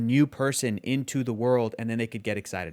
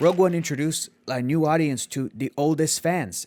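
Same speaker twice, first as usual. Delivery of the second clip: put-on Mexican accent. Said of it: "he goes in his beautiful Mexican accent".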